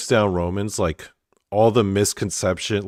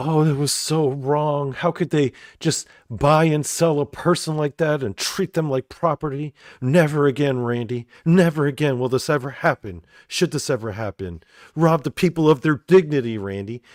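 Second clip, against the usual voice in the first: heartfelt, worked-up, very emotional, earnest delivery; 6 semitones higher than usual. Imitating a podcast co-host who got emotional about slavery: imitating someone emotional. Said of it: "She would get very emotional about it".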